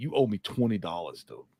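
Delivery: put-on tough-acting voice. Imitating a weed dealer who thinks he's hard: imitating a tough-acting weed dealer. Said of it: "that dude that thinks he's hard".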